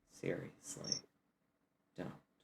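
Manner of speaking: hushed whisper. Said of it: "whisper to the two of you".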